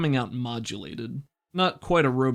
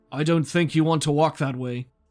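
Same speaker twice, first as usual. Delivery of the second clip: authoritative, commanding, shouted, called-out voice; 3 semitones higher, 4 dB louder than usual. Narrator voices someone behind the listener as they walk away, commanding tone. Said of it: "in a commanding tone say".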